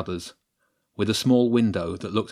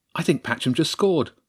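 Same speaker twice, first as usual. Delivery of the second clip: slightly overexcited, a touch too eager, pitched up; 6 semitones higher than usual. A child on lookout while another child tries a door handle, slightly too excited. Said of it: "slightly too excitedly".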